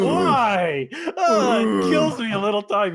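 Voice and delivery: high-pitched, loud, anguished wail.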